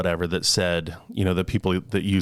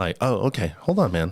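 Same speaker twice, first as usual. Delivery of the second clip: ordinary delivery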